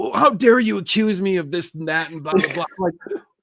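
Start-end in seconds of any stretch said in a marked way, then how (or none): 0.0-2.6 loud, pitched-up, worked-up angry rant. Retelling how a car seller reacted to being accused, imitating an angry man. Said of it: "And he gets all mad at us".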